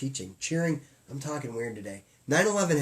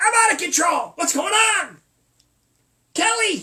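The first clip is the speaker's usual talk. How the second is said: shrill, high, very loud full-blast outburst; 9 dB louder than usual. Retelling a rant about clerks on phones, doing a Regis Philbin impression. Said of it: "I feel like I'm Regis Phil".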